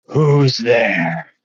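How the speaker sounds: rumbling voice. Storyteller voicing someone inside answering a door knock, in a rumbling voice. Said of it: "you hear a rumbling voice from inside".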